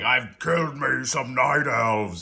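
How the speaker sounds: slow, drawling sea-dog pirate voice. Voicing a figure holding decapitated heads on a rope, pirate voice. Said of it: "I don't know why it sounds like a pirate".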